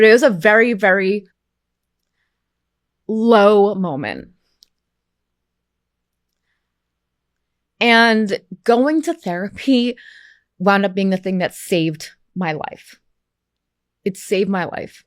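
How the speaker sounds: choked-up voice, on the verge of tears. Sharing a personal story, close to crying. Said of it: "I feel like I'm gonna cry talking about it".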